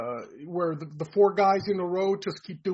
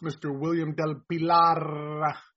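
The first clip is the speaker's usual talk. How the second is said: put-on raspy Latin American accent, half pirate voice, drawn out.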